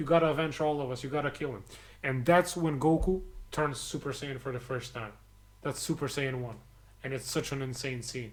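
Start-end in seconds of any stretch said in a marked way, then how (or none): none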